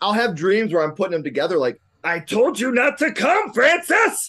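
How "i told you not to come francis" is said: put-on manchild voice, much higher, slower. Chatting about a Pee-wee's Big Adventure double feature, address Francis in a bad Pee-wee voice. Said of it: "That was the worst Pee-wee voice ever".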